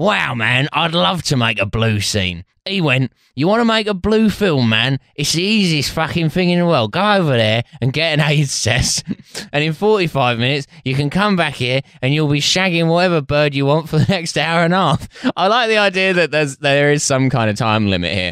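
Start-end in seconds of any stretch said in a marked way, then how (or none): 0.0-15.1 put-on London gangster voice, pitched higher. Doing the quoted lines in Dave Courtney's voice after being asked. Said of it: "could you do this in his voice".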